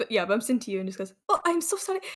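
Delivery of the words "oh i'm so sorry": theatrical, overly dramatic, in-character delivery, pitched up. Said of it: "the whole dramatic".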